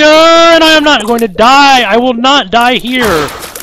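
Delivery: determined, defiant cry. A player in a tough room of chargers, refusing to die, shouting. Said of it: "I apologize for shouting in your ear".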